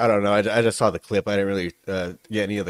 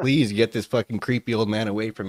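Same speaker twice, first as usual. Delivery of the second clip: usual speaking voice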